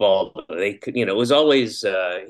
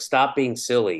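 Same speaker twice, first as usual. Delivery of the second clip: put-on angry scolding, higher pitch; 4 semitones higher than usual. Retelling what the daughter says to the speaker: imitating someone angry. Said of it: "like, angry".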